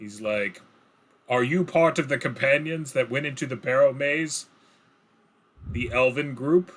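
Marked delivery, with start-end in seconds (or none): 1.3-6.7 booming, resounding voice. Telling a fantasy scene, the speaker voices a huge man strolling up: booming voice. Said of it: "with a rather booming voice".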